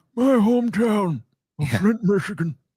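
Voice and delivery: very high pitch, slow, dragged-out intoning. Showing how the voice of Michael Moore will change: Michael Moore old man voice. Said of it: "it's gonna transition into".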